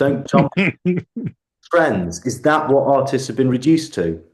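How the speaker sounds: heated, worked-up emotional outburst. Apologizing for getting emotional, then carrying on, emotional and worked up. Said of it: "I get really emotional about this".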